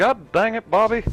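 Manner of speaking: very high, loud, belted outcry. Offering to do an impression while gaming: Hank Hill voice. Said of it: "I could do a Hank Hill a little bit".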